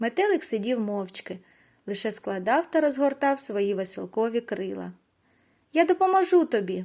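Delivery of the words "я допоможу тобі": abrupt, sudden, high exclaiming burst. A small butterfly sitting beside a trapped lion cub, sudden exclamation. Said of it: "раптом вигукнув він".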